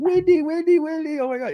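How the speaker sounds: acted, very high, giddy, gushing British accent. Retelling how a fan ran up to Wendy: imitating a giddy British fan. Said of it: "just all giddy".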